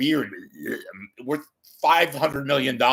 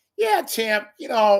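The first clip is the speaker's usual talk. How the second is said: heavy Louisiana drawl, pitched higher; 9 semitones higher than usual. Recalling James Carville's Meet the Press appearances, the speaker does a James Carville impression. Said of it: "he'd go like".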